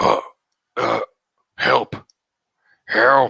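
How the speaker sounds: slow, creaky, halting, broken-speech creature voice. Narrator voicing a Troggle calling out, creature speaking broken common tongue. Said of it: "speak to you in a uh, broken, like, common tongue".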